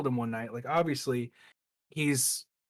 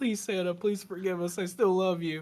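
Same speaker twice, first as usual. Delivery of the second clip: put-on begging, pleading tone, higher pitch; 5 semitones higher than usual. Retelling how someone reacted after angering Santa Claus: imitating someone begging. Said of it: "he's like on his hands and knees".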